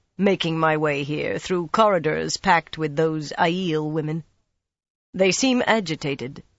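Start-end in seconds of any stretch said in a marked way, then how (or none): none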